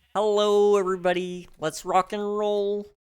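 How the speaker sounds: very high cartoon frog puppet voice. Second try after not doing the voice in a while: Kermit the Frog voice. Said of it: "I haven't done the voice in a little bit".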